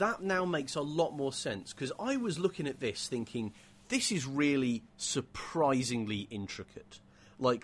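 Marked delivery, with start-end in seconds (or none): none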